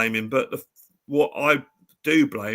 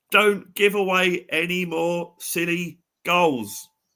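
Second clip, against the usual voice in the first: high, drawn-out pleading shout; 5 semitones higher than usual. Retelling watching a goal alone: retelling shouting at the screen. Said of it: "that's what I'm shouting at the screen".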